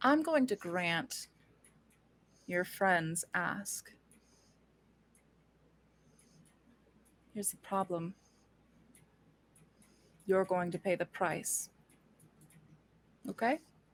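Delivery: very quiet, soft speech. Voicing a character making a deal: speaking very quietly. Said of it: "She's speaking very quietly to Gideon".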